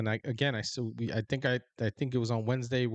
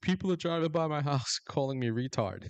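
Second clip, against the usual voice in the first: put-on crybaby whining with swooping pitch; 4 semitones higher than usual. Retelling Walz's complaints about people driving by his house, mock whining as Walz. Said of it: "whining and stuff like that".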